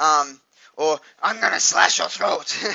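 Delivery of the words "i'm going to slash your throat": put-on rough, creaky masked slasher horror-killer voice. Retelling what he said to strangers on webcam: imitating his own Scream killer voice. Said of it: "I had put the voice on".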